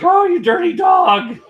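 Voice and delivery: shrill, very high, loud outburst. Imitating another gamer's exclamation while playing Qbert: imitating Phil from Retro Bliss. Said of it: "and he's like".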